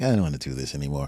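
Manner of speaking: low, soft, quick, weary mutter. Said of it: "I was like".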